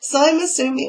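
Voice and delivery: squeaky voice crack. Reviewing a sock crate for viewers, mid-sentence: voice squeaking. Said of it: "oh, my voice squeaked".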